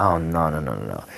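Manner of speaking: slow, theatrical, fake disappointment. A speaker acts out how they'd react if disappointed about someone's neighborhood, mock disappointment. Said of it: "if I was going to be disappointed".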